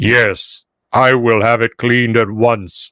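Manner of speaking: very deep basso profundo, lowest bass. Speaker voicing a tall gnome whose voice you feel in your chest, James Earl Jones basso profundo. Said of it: "James Earl Jones, basso profundo".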